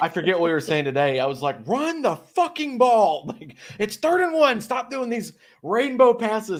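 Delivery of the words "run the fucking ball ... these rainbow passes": put-on shrill, very high, drawn-out scream. Retelling own reaction while watching a game: imitating own screaming like a coach. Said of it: "I'm screaming like I'm an N F L coach".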